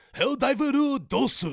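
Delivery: loud, very high put-on Japanese accent. Announcing news about a game, put-on Japanese-sounding accent.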